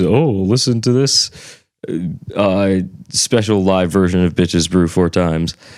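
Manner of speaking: mocking sneering snobbish voice. Describing their background of music snobbery, the speaker imitates a snob in a mocking voice. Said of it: "which I say in a mocking voice".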